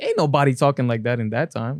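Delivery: plain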